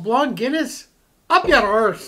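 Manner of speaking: fake Irish accent, badly done. Imitating an Irishman reacting to a blonde Guinness: bad Irish accent. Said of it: "enough of my bad Irish accent".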